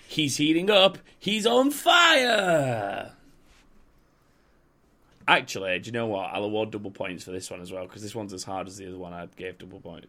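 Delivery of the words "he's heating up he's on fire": very high, very slow, loud, swooping sports commentator hype. Keeping score for Joshua in a game, commentator voice. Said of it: "Did you say that like a commentator?".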